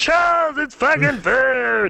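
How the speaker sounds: very high, slow, stretched-out character voice. Showing how she always talks to Charles, in a Pee-wee Herman voice. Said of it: "I do the Pee Wee Herman voice when I talk to Charles".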